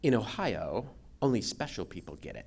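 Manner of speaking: soft, haughty, snooty, put-on British accent. Retelling what a man told them, imitating a snooty British accent. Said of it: "with his British snooty accent".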